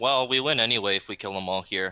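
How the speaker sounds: ordinary talk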